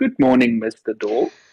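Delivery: very polite, courteous, well-mannered tone. Playing a character greeting a door before opening it: most polite manner. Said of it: "in his most polite manner".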